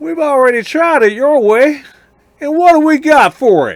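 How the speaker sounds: very high, loud, whiny southern drawl. Narrator reading Rich Fayette's question to the storyteller, in a whining southern drawl. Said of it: "in a perpetually whining voice that still managed to be a southern drawl".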